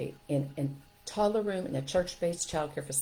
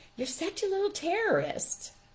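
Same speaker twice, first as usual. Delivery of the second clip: sugary sweet, very high, sing-song voice; 13 semitones higher than usual. Retelling what she said to him after he pushed and hit friends: imitating a very sweet voice. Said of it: "In a very sweet voice".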